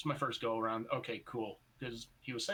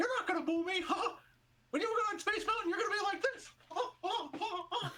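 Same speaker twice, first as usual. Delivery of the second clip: squeaky, very high cartoon voice. Joking about Mickey Mouse taunting a woman in the crowd: Mickey Mouse voice. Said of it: "Mickey Mouse doing it".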